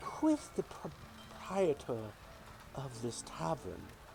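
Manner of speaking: soft-spoken, slow, hushed, unhurried voice. A character addresses the group of heroes in the tavern in a soft voice. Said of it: "and you hear the soft voice".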